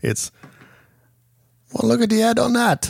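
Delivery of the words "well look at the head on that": put-on very high British accent, h dropped on head. Showing how a British speaker says "head": British accent, dropped H. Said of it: "with the British accent".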